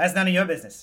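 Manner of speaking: loud, attempted, put-on New York accent. In a role-play, a shopkeeper answers a customer's question, new york accent. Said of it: "pretend to be good at a New York accent".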